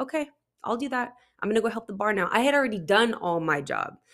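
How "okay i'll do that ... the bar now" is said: fake-pleasant, forced polite tone hiding fury. Retelling how she answered while furious: imitating her own forced smiling reply. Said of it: "hold a smile on my face and be like".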